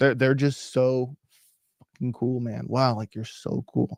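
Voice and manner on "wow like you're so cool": heavily sarcastic, much quieter. Talking about people who act cool, saying this with heavy sarcasm. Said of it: "with the most sarcasm possible".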